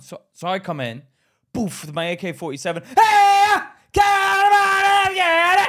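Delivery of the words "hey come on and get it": very loud, shrill, very high, drawn-out scream. Retelling coming onto a film set as an extra: retelling a shouted fake Arabic line. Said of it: "scream and shout, just like, everybody get down".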